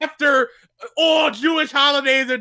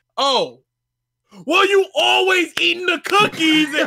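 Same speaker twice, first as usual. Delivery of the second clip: mock screaming, much higher pitch; 3 semitones higher than usual. Retelling how he yelled at you over the cookies: retelling him screaming. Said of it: "he screamed at me for 3 minutes".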